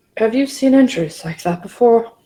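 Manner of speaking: very quiet, hushed, close voice. Voicing a character who steps closer to another: very quiet voice. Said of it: "just very quietly say".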